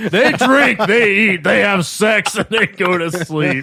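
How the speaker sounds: loud, high, booming godlike proclamation voice. Retelling how the game master asked the players in character, godlike voice from the heavens. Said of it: "godlike voice speaks from the heavens".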